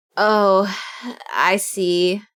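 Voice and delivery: deflated, disappointed, let-down tone. Hearing what someone drew, the speaker reacts, disappointed. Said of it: "Why you sound so disappointed?".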